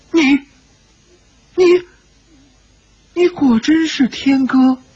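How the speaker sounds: very high, slow, quavering, trembling voice. Narrator reads a character stepping forward to speak, trembling voice. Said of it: "颤声说道".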